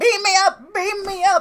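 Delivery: mock, very high, frantic, drawn-out freaked-out scream. Retelling a movie scene where a man panics: imitating someone screaming. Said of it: "starts screaming".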